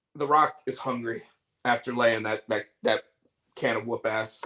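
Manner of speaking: ordinary talk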